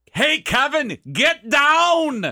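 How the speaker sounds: very high, slow, booming, stretched-out yell going down. Retelling a comedy bit where someone yells across a bar: imitating Arnold Schwarzenegger yelling. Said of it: "he yells at me across the bar".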